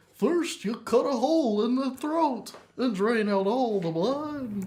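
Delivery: silly, goofy, high, drawn-out read-aloud voice. Imitating a teacher reading embalming steps aloud: goofy voice. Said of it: "in, like, a goofy voice".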